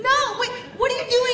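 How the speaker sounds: high, rapid-fire, startled, protesting delivery.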